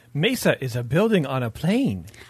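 goofy, silly put-on joke character voice. Mid-explanation on a podcast, a host slips into a Jar Jar Binks impression. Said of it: "That was my Jar Jar impression".

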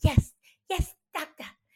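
small, high, mousy stage voice. Quoting a favourite line from a musical character: Ellen Greene impression. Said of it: "low-key the best impression you've ever done".

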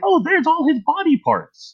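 high, wide-ranging mock innocent surprise.

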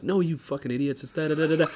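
acted heated shouting, high pitched. Retelling how a woman yelled at the radio because they were wrong, retelling a yell. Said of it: "yelling at the radio".

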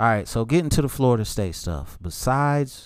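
livelier, brighter tone.

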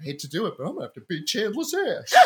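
big sing-song sitcom delivery, pitch swinging widely. Imagining a friend arriving to fight Chandler, imitating Matt LeBlanc as Joey. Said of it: "Joey, Matt LeBlanc, shows up and he's like".

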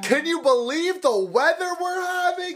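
mock shrill, very high-pitched, loud yelling. Telling of a scene in a bank line, the speaker imitates a man yelling loudly. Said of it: "he's yelling loud too".

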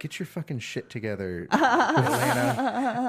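mumbled half to oneself. Retelling muttering to oneself, imitating own mumbling.

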